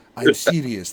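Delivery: low, dropped, dark and dead-serious tone. Retelling a movie line as it turns darker: imitating a darker tone. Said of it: "he goes darker and kinda like".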